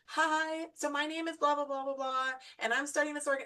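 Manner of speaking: mock formal businesslike tone. Retelling how a woman introduced herself to a stranger, imitating a formal tone. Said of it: "it was very formal and it was very".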